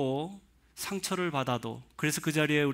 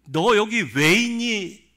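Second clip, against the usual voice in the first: loud, high-pitched, urgent, pressing scolding tone; 6 semitones higher, 8 dB louder than usual. Speaker acting out God's first words to Elijah, retelling an urgent rebuke. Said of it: "질책하면서 나무라면서 등을 떠밀면서 ... 급박스럽게".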